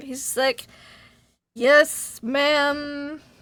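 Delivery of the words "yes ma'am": put-on drunk, intoxicated-sounding speech. Voicing a drunk character answering a woman who slapped him: drunk. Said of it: "He's drunk".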